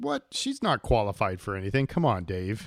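loud, sarcastic mock outrage.

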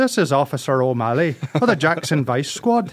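put-on Irish accent, police officer voice. Calling a friend the next day posing as a cop, Officer O'Malley Irish accent. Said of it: "So I'm doing an Irish accent for an Irish cop".

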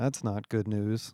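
murmuring. Reading a friend's reply as the group talks of the work ahead: murmured. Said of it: "Paul murmured".

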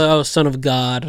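plain

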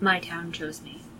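very soft, quiet, feelingless, flat monotone. A player voices her character answering where she is from, with no feeling. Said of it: "No feeling".

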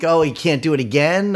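plain

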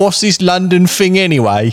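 worst-ever fake Cockney accent. Attempting a London-style voice for the others, a bad Cockney accent. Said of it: "the worst Cockney accent in recorded history".

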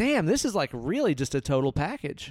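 normal talking voice

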